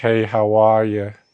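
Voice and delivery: put-on New York accent. Describing how a man's accent sounds, the speaker demonstrates: new york accent. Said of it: "kind of like a tie in New York City".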